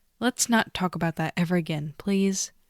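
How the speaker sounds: usual speaking voice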